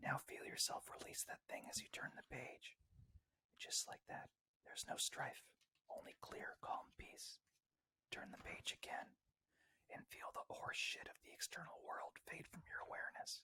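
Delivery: gentle, soft asmr-style whisper. Reading a meditation book aloud: attempted ASMR voice. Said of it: "I'm no A S M R voice, but I'll do my best".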